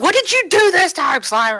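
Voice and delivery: loud, high-pitched bickering shout.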